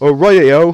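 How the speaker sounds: very loud, bad Australian accent drifting into British. Trying an accent after praising the other speaker's: bad Australian accent. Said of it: "That sounded very B-, British more than Australian".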